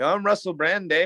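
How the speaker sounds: bad, high, fake put-on Canadian accent. Pressed to try, claiming to be Russell Brand: fake Canadian accent. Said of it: "That was Can-".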